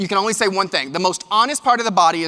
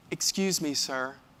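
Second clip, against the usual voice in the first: very hushed, sweetest gentle voice, put on, polite; 4 semitones lower, 11 dB quieter than usual. Retelling how a woman behind him called out: imitating a very sweet, nice voice. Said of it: "in the nicest, sweetest voice I've ever probably heard".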